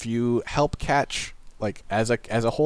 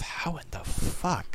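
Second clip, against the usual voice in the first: very slow whisper, muttered under the breath; 6 semitones higher, 4 dB quieter than usual. Retelling struggling with trade menus: retold quiet muttering under breath. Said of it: "just sort of quietly muttering under my breath".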